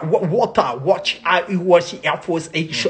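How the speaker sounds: garbled, put-on English accent.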